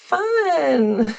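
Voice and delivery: high, brightly noncommittal, polite tone. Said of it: "just go".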